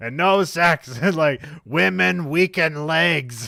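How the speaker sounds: coarse, very loud, high-pitched bellow. Talking about Rocky being told to put off sex, do a coarse Burgess Meredith impression. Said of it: "My voice gets completely coarse".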